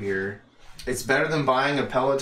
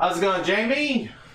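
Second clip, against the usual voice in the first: very high, excited voice; 9 semitones higher, 3 dB louder than usual. Greeting the other speaker on the show, voice going up an octave. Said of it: "You went up an octave".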